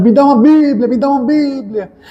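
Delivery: mock drunk man's high, demanding yell. Recounting a drunk man at the school gate, imitating a drunk man shouting. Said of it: "esse bêbado estava gritando".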